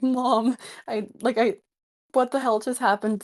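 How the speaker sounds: put-on sobbing through the words, distraught and pleading. Retelling calling their mom after hearing bad news, acting out sobbing. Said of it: "calling my mom and just like sobbing".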